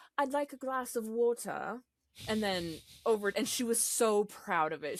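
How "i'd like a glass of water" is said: put-on British accent, pitched a little higher. Retelling how a mother's daughter once asked for water: imitating Hazel in British accent. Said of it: "Hazel used to have my accent".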